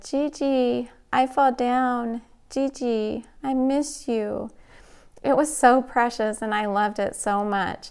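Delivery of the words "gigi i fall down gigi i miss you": put-on slow, tender little toddler voice. Retelling a little girl's phone call after her fall, imitating her tender crying voice. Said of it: "Her tender little voice was so cute as she cried".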